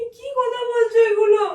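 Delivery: high, loud crying sob. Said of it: "কান্না করো না".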